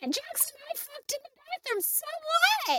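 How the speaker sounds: tiny, very high-pitched, squeaky little voice. Describing a tiny actress, then imitating how she talks: imitating Laura Lee's voice. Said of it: "She talks like this".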